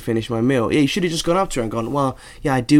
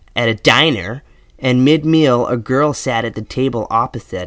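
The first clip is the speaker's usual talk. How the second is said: put-on American accent, read aloud. The speaker reads out a letter from an american writer, put-on american accent. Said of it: "Is that a good American accent?".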